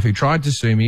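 ordinary delivery

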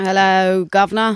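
put-on Cockney English accent. Greeting the judge in a courtroom bit: Cockney accent. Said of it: "Cornelia is suddenly a Cockney".

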